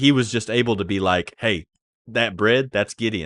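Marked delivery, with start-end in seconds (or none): 1.4-3.3 put-on matter-of-fact tone, higher and louder. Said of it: "it's said so matter-of-factly".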